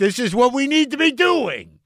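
high-pitched, loud yell. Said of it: "and you're yelling".

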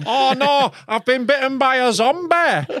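put-on Newcastle Geordie accent, high-pitched. Playing someone just bitten in a zombie bit, in a geordie accent. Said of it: "You were Geordie".

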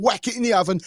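put-on confident tone. Retelling how someone answered while cooking: imitating someone bluffing confidently. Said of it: "bluffing away, just going".

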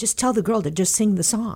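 put-on British accent. Retelling what a composer said after a show: Andrew Lloyd Webber's British accent. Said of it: "he did it in his British accent".

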